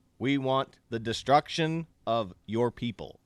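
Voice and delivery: normal talking voice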